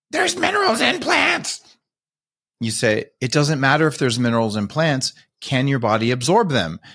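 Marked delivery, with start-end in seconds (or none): 0.1-1.6 piercing, very high, shrill, screechy voice. Mimicking what a vegan says in an argument, screechy voice. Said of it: "kind of uses that screechy voice and says".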